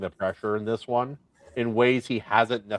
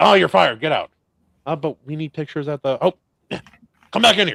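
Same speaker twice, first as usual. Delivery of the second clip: put-on gruff voice, higher and louder; 5 semitones higher, 7 dB louder than usual. Acting out the newspaper boss firing and rehiring: J. Jonah Jameson impression. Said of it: "Jonah Jameson in those O G".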